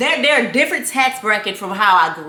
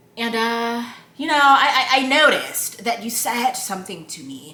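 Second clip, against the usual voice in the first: proper, correct, well-spoken manner. Retelling how Justin raises a problem: imitating Justin talking proper. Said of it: "that's why I'm talking like that".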